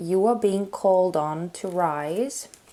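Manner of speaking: normal talking voice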